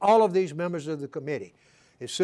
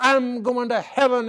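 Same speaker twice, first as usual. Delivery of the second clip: play-acted high, heated shrieking yell; 8 semitones higher, 4 dB louder than usual. Retelling a legislator's loud argument during a lobbying visit: imitating someone screaming. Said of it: "he's screaming at the top of his voice".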